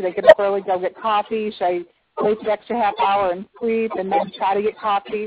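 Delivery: ordinary delivery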